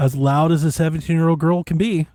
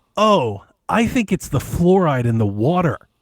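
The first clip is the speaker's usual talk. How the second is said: ordinary talk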